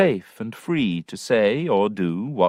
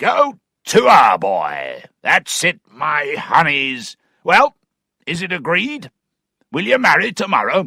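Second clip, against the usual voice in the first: loud, booming call, crying out; 4 semitones higher, 6 dB louder than usual. Narrator reads Mr. Weston bursting in on Tom and Sophia, Mr. Weston's hunting voice. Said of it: "[name] joined them. / and with his hunting voice cried out".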